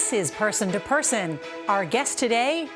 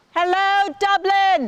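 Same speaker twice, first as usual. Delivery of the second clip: shouting, much higher and louder; 11 semitones higher, 7 dB louder than usual. Taking up the offer to shout something, shouted. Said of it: "You want me to shout something?".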